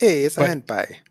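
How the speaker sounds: very loud, high-pitched, put-on New York accent. Joking about how the name hand pie came about: imitating a New Yorker. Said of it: "a New Yorker saw a meat pie and was like".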